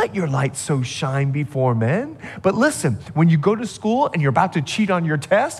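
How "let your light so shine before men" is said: soft, gentle, very low-pitched motherly voice. Imagining gently speaking to the listener, in a gentle mom voice. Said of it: "like the mom voice".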